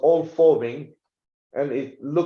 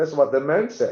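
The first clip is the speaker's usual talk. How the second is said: plain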